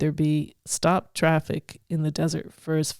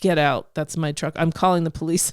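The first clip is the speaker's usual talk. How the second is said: ordinary delivery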